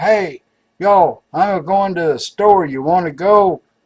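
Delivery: loud, drawn-out hollering, up close. Telling a joke, yelling to a centipede in a box: yelling into the box. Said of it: "yelled at it".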